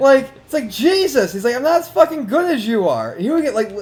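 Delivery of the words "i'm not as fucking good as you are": mock genuinely angry, pissed-off, swooping griping tone. Retelling a man losing to the speaker at NBA Live, imitating an angry complaint. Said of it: "He was legitimately pissed".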